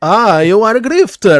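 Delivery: put-on Russian accent, slow, loud, edging toward Italian. Correcting the others who heard italian, the speaker repeats his line in a mock russian accent. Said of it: "That was Russian".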